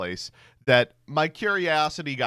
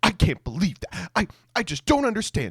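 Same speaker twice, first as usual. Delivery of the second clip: high-pitched, angry, mad, stumbling outburst; 7 semitones higher than usual. Retelling her reaction to getting a jury duty slip, imitating someone angry. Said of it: "And she got so mad".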